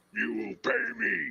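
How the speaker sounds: loud, rough, gruff snarling growl. Narrating a voice heard through a door demanding payment: loud, growling voice. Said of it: "loud, growling voice demanding payment".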